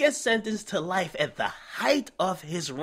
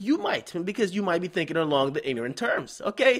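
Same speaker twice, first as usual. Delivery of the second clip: ordinary delivery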